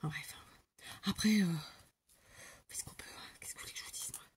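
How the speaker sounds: soft, resigned whisper.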